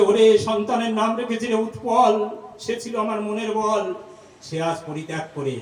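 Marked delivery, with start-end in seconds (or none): none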